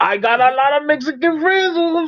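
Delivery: put-on Spanish-inflected American English accent. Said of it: "they say".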